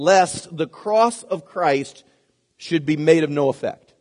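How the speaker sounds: slow, deliberate scripture-style reading.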